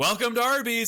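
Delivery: acted-out, very high, many voices yelling in unison. Describing restaurant staff greeting customers at the door, imitating staff yelling in unison. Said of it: "everybody in the kitchen and the counter yells".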